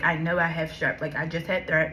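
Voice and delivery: ordinary talk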